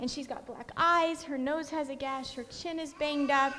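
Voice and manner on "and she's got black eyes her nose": plain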